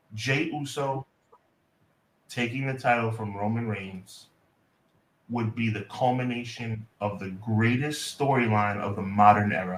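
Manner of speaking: very calm, composed, even, very low and soft voice. Handed the segment, the speaker gives his take, very calm voice. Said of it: "in a very calm voice".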